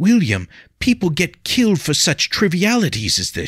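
very high, anxious, polite, desperate pleading. A lady, desperate, warns the man who ignores her that such contests cost lives. Gentle, demure, polite, anxious, pleading. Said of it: ""When you are finished fawning over the Lady [name]".

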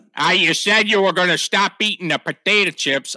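put-on Yankee accent. Giving a voice to one of the dudes at a high tech lab, put-on Yankee accent. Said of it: "I gave him a Yankee accent".

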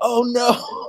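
high, dismayed gasp.

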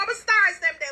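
high, wailing mock crying sobs.

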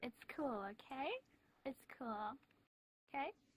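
soft, fake, put-on California girl voice. Calming another speaker during an argument: put-on California girl voice. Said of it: "giving me that fucking California girl".

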